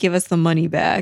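ordinary delivery

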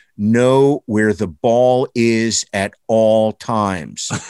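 grave, unsmiling, dead serious, very slow. Retelling a photographer's warning at a first game: imitating Mark Goldman, dead serious. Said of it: "looked at me dead serious and said".

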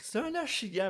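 put-on jittery, nervous English accent, very high pitch. Retelling what they said on landing a fish: imitating own nervous English accent. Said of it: "avec mon accent anglais, nerveux".

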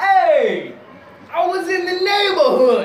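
very high, loud put-on Italian accent, long "hey". Retelling a bit about an uncle arriving at the door: italian accent. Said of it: "it is an Italian accent".

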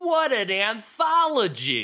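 mock very high, swooping, over-the-top scream. Retelling a drunk guy screaming a line: screaming in Michelangelo voice. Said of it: "screamed out in the most Michelangelo voice possible".

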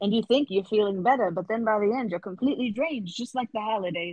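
sudden, odd, out-of-nowhere mid-Atlantic lilt. Riffing with another speaker about a Christmas town, slipping into a weird mid-Atlantic accent. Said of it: "That weird mid-Atlantic accent came from all of a sudden".

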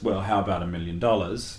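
plain

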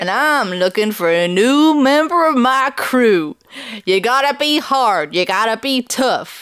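put-on cowboy character voice. Voicing an outlaw character at the beginning of a game, Bart the Fart cowboy voice. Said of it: "I'm doing a voice for it".

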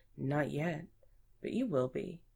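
usual speaking voice

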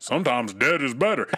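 put-on old man voice. Quoting a favorite movie line, imitating the old dude from the movie. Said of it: "I wish I could say it like him".

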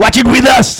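robotic put-on machine voice. Asked by the others to give a little Terminator: Terminator voice. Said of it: "Give us a little Terminator".

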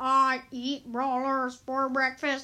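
slow, drawn-out video game voice line, pauses between words. Quoting a favorite skin's voice line: bad Virus 8-Bit imitation. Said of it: "I'm so bad at this".

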